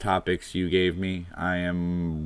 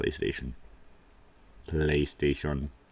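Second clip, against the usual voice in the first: robotic computer voice, quieter and lower; 3 semitones lower, 5 dB quieter than usual. Reminiscing about playing Resident Evil, attempting the PlayStation computer voice. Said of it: "I can't do that computer voice".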